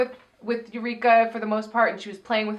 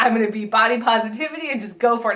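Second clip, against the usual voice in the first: usual speaking voice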